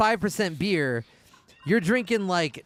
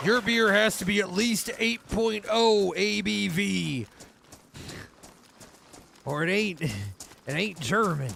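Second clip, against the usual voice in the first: fake American accent, put on for effect; 3 semitones higher than usual. Explaining German beer laws, voicing a German: put-on American accent. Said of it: "doing like your American fucking accent".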